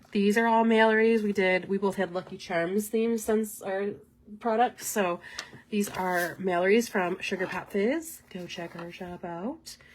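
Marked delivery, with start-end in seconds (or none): 8.3-9.7 odd, weird, very quiet, hushed put-on voice. Plugging another seller's shop, the speaker says it in a weird voice. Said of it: "that was a really weird voice".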